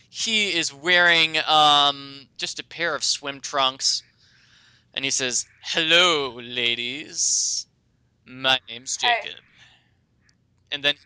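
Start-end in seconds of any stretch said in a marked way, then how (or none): 5.6-9.3 slow, sexy, seductive voice. Voicing a werewolf who greets the players: sexy werewolf Jacob voice. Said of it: "a sexy, sexy beast just pops out of the water".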